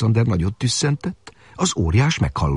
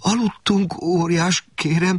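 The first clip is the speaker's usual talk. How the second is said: high, stuttering, halting, stammering words; 8 semitones higher than usual. Martin, held up by the giant, answers him, stammering. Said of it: "dadogta Martin".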